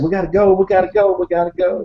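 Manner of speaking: mock frantic, high-pitched, panicked and repetitive. Retelling a companion kicking out the fire: imitating someone panicking. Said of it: "And he's saying".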